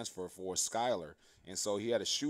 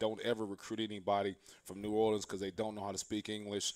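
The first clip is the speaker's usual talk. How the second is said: ordinary talk, nothing marked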